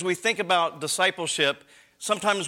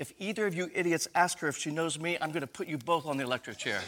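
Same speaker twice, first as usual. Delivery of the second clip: very quiet, hushed, private murmur; 7 dB quieter than usual. Telling a joke, voicing a judge warning two counselors at the bench: very quiet voice. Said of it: "in a very quiet voice".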